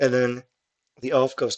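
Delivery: ordinary talk, nothing marked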